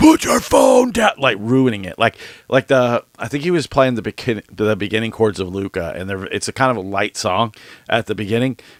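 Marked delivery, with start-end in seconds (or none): 0.0-1.1 very high, shrill screaming at top of lungs. Retelling a guy in the concert crowd: imitating someone screaming. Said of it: "screaming at the top of his lungs".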